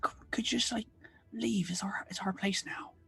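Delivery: hushed voice. Asking ghosts again to leave the inn: whispering. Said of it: "I can whisper it if you like".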